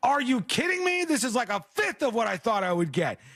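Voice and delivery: high-pitched, furious, outraged rant. Retelling a woman's reaction to the money in her wedding cards, mock-furious. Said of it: "She was so mad".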